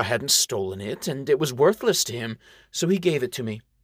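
plain

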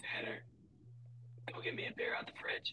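put-on whispered, breathy, very hushed old man voice. Recalling a late grandfather asking for a beer, imitating grandfather's whisper. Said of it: "It sounded like he was whispering".

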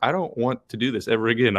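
ordinary delivery

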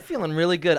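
ordinary talk

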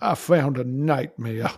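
put-on American Southern accent. Re-saying a quoted line when asked, in a put-on southern accent. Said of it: "you didn't say it in a Southern accent".

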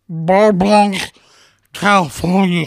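thick, throaty speech, as if throat is clogged. Mocking how the other speaker says the place name: imitating their pronunciation, food in throat. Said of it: "If I'm gonna say it like you, I have to put a lot of food in my throat".

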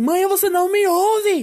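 very high, very slow, drawn-out yell. Recounting being ignored by their mother, the speaker reenacts calling out to her: retelling shouting at mom. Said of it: "gritando como a mãe".

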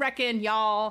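put-on American Western accent. Getting ready in the mirror, slipping into a character's Western accent. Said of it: "kind of get that accent".

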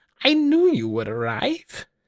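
put-on very high, crackling, cracky old-woman voice. Narrating, the speaker voices a figure greeting the arriving party: cracky voice. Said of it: "And in a cracky voice, they say".

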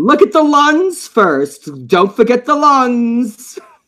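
put-on very high, nagging, thick New York accent.

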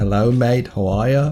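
terrible put-on Australian accent. Introducing an australian listener's question, a bad put-on australian accent. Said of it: "worst Australian accent ever".

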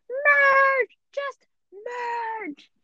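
tiny, very high squeaky voice, "merge" drawn out. Recalling a favorite scene, imitating the voices in it: squeaky voice. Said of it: "the squeaky voices going like".

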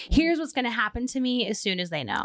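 plain

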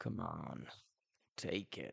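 deep, very low skeleton mutter. A narrator reads a skeleton's line in a story, muttered. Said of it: "muttered the skeleton".

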